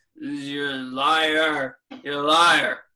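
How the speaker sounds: put-on very slow drunken drawl. Retelling a drunk heckler in the balcony: imitating a drunk heckler mumbling. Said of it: "starts mumbling the whole time".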